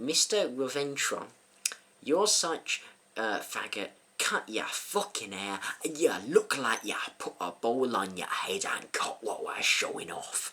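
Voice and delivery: slow, appalling fake Scottish accent. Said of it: "absolutely appalling, hugely probably racist Scottish accent".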